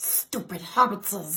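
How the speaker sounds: breathy, hissing creature voice in a whisper. Impressions challenge, taking turns as the other calls out characters, Gollum impression.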